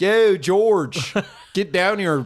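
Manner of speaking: put-on Philadelphia accent. Joking about the Philly accent, voicing Ben Franklin in Philly accent. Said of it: "when did the Philly accent start?".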